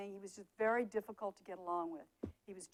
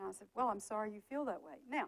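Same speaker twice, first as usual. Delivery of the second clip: ordinary talk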